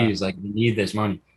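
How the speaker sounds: ordinary talk, nothing marked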